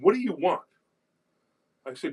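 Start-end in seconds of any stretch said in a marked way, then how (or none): 0.0-0.6 high, mock dismissive, rude tone with attitude. Retelling a call from a guy: imitating someone with attitude. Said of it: "you could tell the guy had an attitude".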